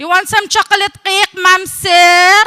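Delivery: very loud, high maid's English accent, "sir" stretched. Joking about Emirati stereotypes, imitating a maid's English. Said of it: "I'd be talking like this".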